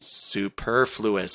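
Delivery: superfluous said very slow, careful and low.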